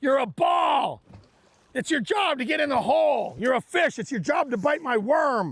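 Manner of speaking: put-on, all-out, high-pitched yelling. Yelling at fish that won't bite: yelling like Happy Gilmore. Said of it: "it's my Happy Gilmore moment".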